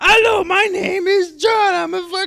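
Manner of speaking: shrill, very high, booming, loud, slow, drawn-out puppet voice. Retelling how he mocked an audience member, in a puppet voice. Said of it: "he just turned him into a puppet".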